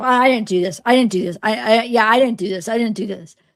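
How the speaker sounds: put-on odd, fake manner. Imitating how someone denied something: imitating someone's fake-sounding denial. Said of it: "the way he said that?".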